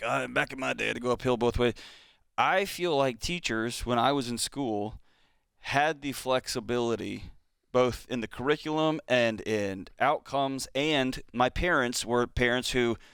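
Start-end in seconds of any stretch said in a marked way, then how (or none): 0.0-1.7 put-on creaky, grumbling old-man voice. Comparing teachers now with teachers back then: mock old man voice. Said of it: "I know I sound like an old man".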